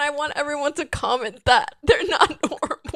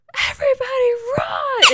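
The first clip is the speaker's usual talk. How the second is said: frantic, very high, panicked shriek; 10 semitones higher, 4 dB louder than usual. Imagining a scare with friends, the speaker acts out a panicked scream. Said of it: "I'd run out of there screaming".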